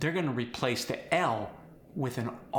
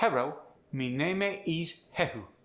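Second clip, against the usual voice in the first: fake Japanese accent on English sounds; 4 semitones higher than usual. Trying the prompted sentences in a put-on japanese accent. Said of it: "Try these sentences using a Japanese language".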